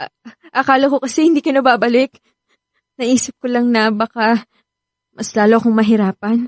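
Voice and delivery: crying while talking. Speaking to someone just home on vacation, crying while talking. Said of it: "bakit ka umiiyak?".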